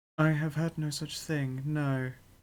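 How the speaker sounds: whispering. Voicing a character who replies at the listener's whispering level, whispering. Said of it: "she'll then speak up to your whispering level".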